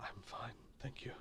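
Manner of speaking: very quiet whisper, barely there. Voicing Varric in a game scene: very quiet voice. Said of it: "Varric will very quietly say".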